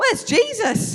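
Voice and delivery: acted, loud, high, carrying child's voice. Retelling a boy's unscripted line during a nativity play: imitating a loud child. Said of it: "really audibly, loudly".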